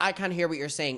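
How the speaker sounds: patronising, dismissive, condescending talking-over tone. Retelling how Todd spoke over Tana: imitating Todd's condescending tone. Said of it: "He was being condescending".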